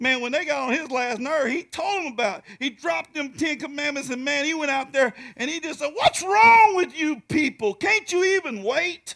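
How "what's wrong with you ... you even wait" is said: fed-up, loud, drawn-out hollering scream. Retelling how Moses came down to the people: imitating Moses screaming. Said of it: "started screaming at them".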